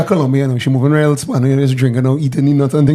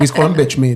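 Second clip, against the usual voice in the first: usual speaking voice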